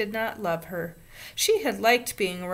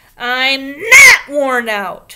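very loud, very slow, shrill, swooping, drawn-out shriek; 6 semitones higher, 17 dB louder than usual. Ramona protests after a grown-up says she is worn out, shrieking. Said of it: "she shrieked".

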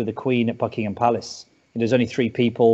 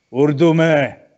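loud, sudden bellow; 4 semitones higher, 7 dB louder than usual. Retelling how Imran suddenly interrupted a formal welcome speech, imitating a man bellowing out. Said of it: "he bellows out".

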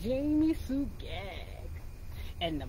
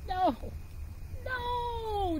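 very high scream, the word no stretched long; 11 semitones higher than usual. Narrator reading a graveyard story as Jamie Sue screams at Buster: screaming. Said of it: "Jamie Sue screamed".

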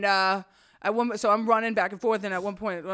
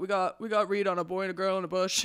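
normal talking voice

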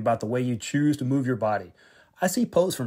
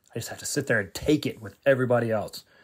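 ordinary talk, nothing marked

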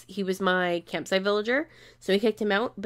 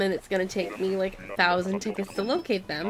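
usual speaking voice

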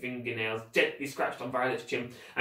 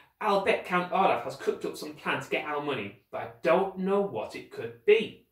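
plain

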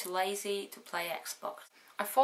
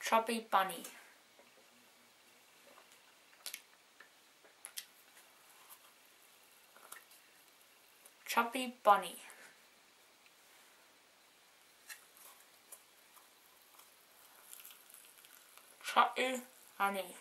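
whispery, breathy mumble through a packed mouth; 2 semitones higher, 5 dB quieter than usual. Stuffing marshmallows in mouth during a game and counting them, mouth full of marshmallows. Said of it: "I got 7 in my mouth".

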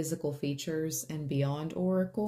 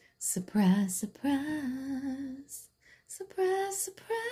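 very high, stretched-out, drawn-out surprised voice; 10 semitones higher than usual. Imitating the lady from the eighties memes and videos: an eighties meme lady. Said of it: "Those memes and those videos with that lady from".

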